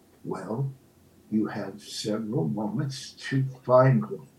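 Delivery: grave, somber, low and quiet voice. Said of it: "with that wonderful somber voice".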